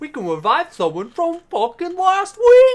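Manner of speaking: very high, shrill, very loud, swooping nerd voice. Mocking a friend's way of talking, in a Steven impression. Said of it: "That's my best Steven impression".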